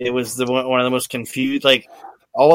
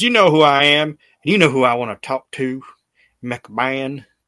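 put-on upset man's voice with Southern accent. Retelling Paul Bearer showing up and demanding McMahon, imitating Paul Bearer's upset Southern voice. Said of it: "doing his fat Southern man upset Paul Bearer".

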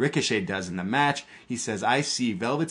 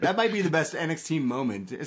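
ordinary talk

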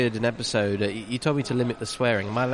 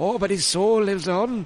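put-on Welsh accent; 7 semitones higher than usual. Recalling a film character's line, in a Welsh accent. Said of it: "a great Welsh accent".

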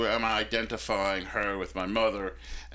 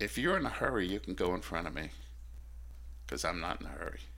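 put-on pleasant, friendly tone, quick; 3 semitones lower, 9 dB quieter than usual. Telling how they turned and spoke to the guy, retelling a perfectly nice tone. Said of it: "said to the guy in a perfectly nice voice".

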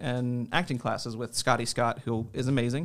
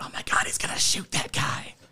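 excited stage whisper, loud and clearly audible. Retelling what a teen in the audience said during the play: imitating a loud whisper. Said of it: "teen just whisper very loudly".

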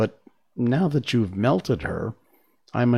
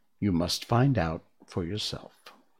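ordinary delivery

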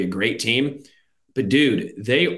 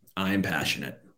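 very monotone, low and flat, deadpan; 4 semitones lower, 8 dB quieter than usual. Ranking teams with another speaker, answering whether they are passionate, very monotone. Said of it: "very monotone".

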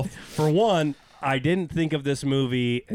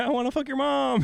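very high, pitched way up, casually tossed off; 11 semitones higher than usual. Quoting a movie line the way Paul Rudd mutters it under his breath. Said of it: "say stuff under his breath, like when he's like".

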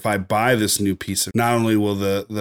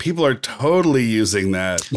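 dripping, eye-rolling sarcasm with swooping pitch; 2 semitones higher than usual. Joking about a camera lens's extra control ring: sarcastic tone. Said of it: "I sense that sarcasm there".

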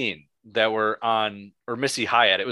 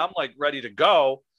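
ordinary talk

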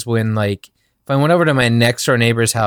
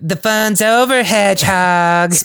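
effeminate voice, pitched up; 8 semitones higher than usual. Speaker quoting a spiky bounty-hunter character's line, in an effeminate tough-guy voice. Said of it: "he has the most effeminate voice I've ever heard".

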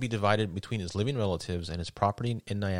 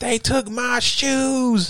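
very high, very loud, drawn-out, top-of-the-lungs yell; 9 dB louder than usual. Guessing what a man riding at night was yelling: imitating Butler yelling. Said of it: "I wonder what he was yelling".

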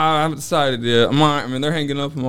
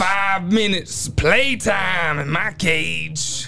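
high, hyped, pro wrestler promo-style voice; 6 semitones higher than usual. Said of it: "you're doing the Macho Man thing".

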